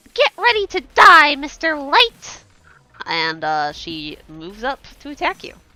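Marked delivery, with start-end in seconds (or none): 0.1-2.4 put-on very high, shrill, loud child voice. Voicing a little girl who points her rapier and threatens a player: kid character's battle taunt. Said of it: "she goes".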